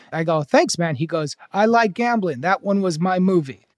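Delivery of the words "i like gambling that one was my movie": simple, broken English. Retelling what a man who stopped the speaker said, imitating broken English. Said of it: "he goes in broken English".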